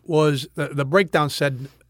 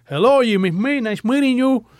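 put-on higher, broken Cuban accent; 8 semitones higher than usual. Retelling walking into an audition and greeting everyone, in a broken Cuban accent. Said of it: "In my Cuban broken accent".

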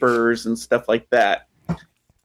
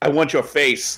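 plain

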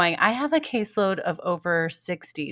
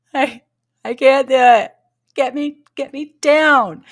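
mock crying, much higher, louder, slower; 7 semitones higher, 11 dB louder than usual. Retelling being in a harness while her family cheered: imitating crying through tears. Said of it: "I'm crying with tears saying".

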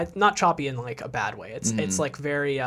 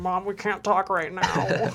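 put-on high, slow, dragged-out stoned drawl; 6 semitones higher than usual. Retelling a movie scene, speaker voices the kids answering their mom: put-on stoned voice. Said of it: "that's my, like, I'm high on weed voice".

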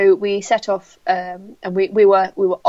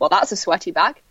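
usual speaking voice

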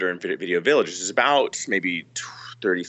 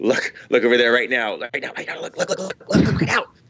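mock excited, nervous, giddy, rushed and urgent; 4 semitones higher than usual. Retelling how Michael urged everyone to look: imitating excited giddy urging. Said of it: "he gets this crazy look on his face, like, just almost, like, excited, nervous, giddy".

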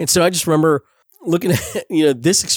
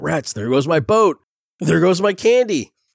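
mock frantic cartoon-cat fretting, rising pitch; 2 semitones higher than usual. Quoting a favorite Halloween special scene, imitating Garfield freaking out. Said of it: "he's kinda freaking out".

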